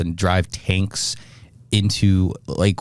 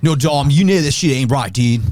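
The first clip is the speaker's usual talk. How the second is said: put-on, pitched-up Californian Valley Boy dude accent; 7 semitones higher, 4 dB louder than usual. Imitating an actor's odd accent from a street racing movie: Paul Walker impression, Valley Boy accent. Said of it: "he just has this weird accent".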